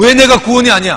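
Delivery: very loud, high, indignant, angry outburst. Retelling how a church deaconess suddenly got angry when questioned, imitating an angry retort. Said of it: "갑자기 화를 내는 거예요".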